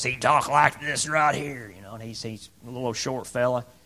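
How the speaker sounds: put-on gravelly old preacher voice. Recalling a Baptist preacher and how he talked, gravelly old preacher voice. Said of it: "he had this old grovelly voice".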